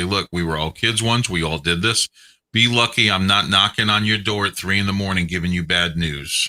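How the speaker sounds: usual speaking voice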